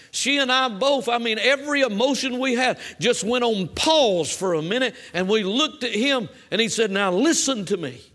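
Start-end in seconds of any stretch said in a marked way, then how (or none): 6.9-7.9 commanding, authoritative raised voice, acted out. Retelling what he said to the speaker and her, retelling a raised voice of authority. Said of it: "his voice rose up to the voice of authority".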